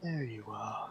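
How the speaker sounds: gentle, very soft, hushed motherly voice. Narrating two characters falling asleep, the speaker voices the words they hear in a soft maternal voice. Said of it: "in that same soft maternal voice".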